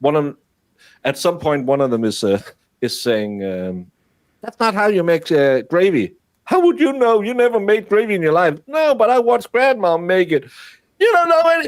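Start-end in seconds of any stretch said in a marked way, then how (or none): 4.4-11.7 mock screaming, Alabama holler accent, higher. Retelling two ladies' gravy quarrel on a show: imitating screaming in alabama holler accent. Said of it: "they're just screaming".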